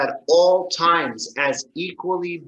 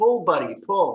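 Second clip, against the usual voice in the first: nonchalant, casual, totally unbothered mumble. Telling a joke, acting out the man's third call, mumbling nonchalantly. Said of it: "he kind of mumbles nonchalantly".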